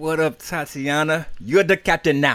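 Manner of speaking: terrible put-on Somali accent, loud and high. Greeting the captain with a joke line: bad Somali accent. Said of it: "was that supposed to be, like, your Somali accent?".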